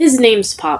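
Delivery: plain reading voice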